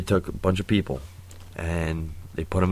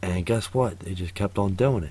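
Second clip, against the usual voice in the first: ordinary delivery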